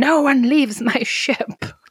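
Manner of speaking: put-on captain's yell. Retelling a movie scene where he grabs the mom: retelling George Kennedy's yell. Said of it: "he starts yelling".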